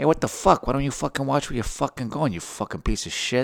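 high, angry, hot-tempered Italian man's accent. The speaker acts out two Italian guys bumping into each other at a bar, Italian guy impression. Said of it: "Two totally different types of Italian guys".

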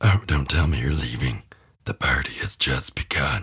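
low, deep horror-movie demon voice. Reviewing a horror movie, the speaker shows off its demon's voice, a demon voice impression. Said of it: "I loved the demon voice. I actually have it down to a T. Let me show you".

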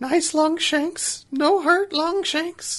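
shrinking, afraid voice. A game master voices a character as a player reaches out to touch him: shrinking back, fearful. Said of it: "shrink back a little bit and go".

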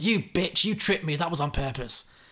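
mock furious, angry, pained cry. Retelling a story in which an injured player accuses a rival: acting out a furious scream. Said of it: "she's furious, so she screams out".

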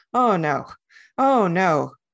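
very slow, worried, anxious dismay. A machine realizing how foolish it has been, anxious. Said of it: "the anxious machine's forearm".

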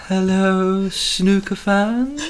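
mimicking odd rising inflections. Imitating a man's snooker greeting, with weird rising inflections. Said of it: "He's got weird like rise and inflections".

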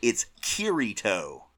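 loud accent, as American as possible. Repeating a character's name so another speaker gets it: most Americanized accent possible. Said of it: "in the most, uh, Americanized accent as possible".

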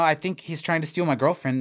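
plain

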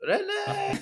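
very high, drawn-out calling out. Comparing the scene to another show's character: imitating Renee's mother calling. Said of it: "Renee's mother in Hello, Hello".

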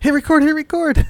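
shrill, loud, high-pitched shouting. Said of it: "just yelling at him".

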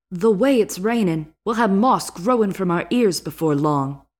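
put-on light Brooklyn accent with an Irish tinge. Reading a novel aloud and voicing Gendry, Gendry in Brooklyn-Irish accent. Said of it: "a little Brooklyn accent, but it also has a little like Irish".

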